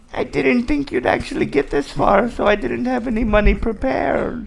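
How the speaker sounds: put-on very high, crackly, creaky old woman character voice. Voicing the old woman at her farm: old woman character voice. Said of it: "says in the character's voice".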